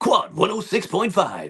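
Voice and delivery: booming, swooping radio DJ announcer patter. Explaining an affected accent, showing how American radio DJs used to talk, radio DJ voice. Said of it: "radio D Js who would be who would say things like".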